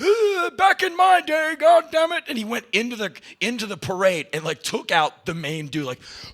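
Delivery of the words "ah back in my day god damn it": put-on old man voice, very high pitched. Retelling an old man watching a Klan march: imitating an old man. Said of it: "This old man is watching".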